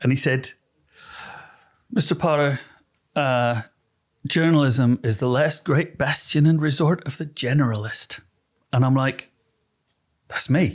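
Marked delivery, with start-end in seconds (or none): 1.9-8.2 put-on American accent throughout. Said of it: "he went in an American accent".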